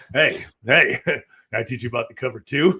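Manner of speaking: put-on, flirting football coach voice. Picturing a coach trying to hit on an assistant: imitating Jim Harbaugh flirting. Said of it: "he was like".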